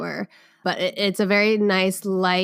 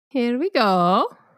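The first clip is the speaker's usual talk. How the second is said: goofy put-on Italian accent; 4 semitones higher, 3 dB louder than usual. Getting excited for a new experience, suddenly slipping into a Mario voice. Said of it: "I just turned into Mario or Luigi".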